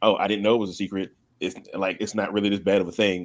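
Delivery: ordinary talk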